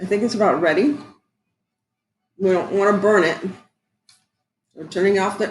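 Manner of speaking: talking with mouth full of food. Cook boiling brown sugar and butter, talking with mouth full. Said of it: "I'm talking my mouth full".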